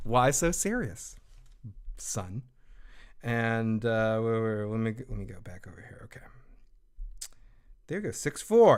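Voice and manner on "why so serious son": near-whispered, slow, breathy put-on character voice. Telling a caller they sounded like the Joker: Joker voice. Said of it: "You kinda sounded like the Joker, Heath Ledger".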